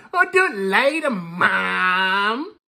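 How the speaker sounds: put-on very slow whining toddler voice, "mom" drawn out. Reacting to a clip, mimicking her excuse to Mom in a mocking toddler voice. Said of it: "She sounds like a toddler".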